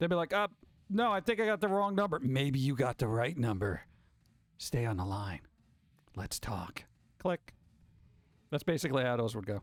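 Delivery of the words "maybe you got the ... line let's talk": put-on menacing tone, low and sinister. Speaker reenacts talking to people on the phone, sinister voice. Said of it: "I'd give them that sinister voice".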